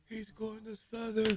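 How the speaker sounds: high, slow, stunned mock outrage. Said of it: "My mom said it was just like a big uproar".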